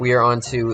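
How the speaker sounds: usual speaking voice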